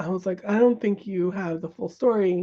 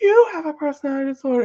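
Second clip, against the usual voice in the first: loud, high-pitched, laughing, taunting mockery; 7 semitones higher, 6 dB louder than usual. Retelling a husband mocking the therapist on the drive home, imitating mocking laughter. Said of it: "laughing and laughing and mocking the therapist".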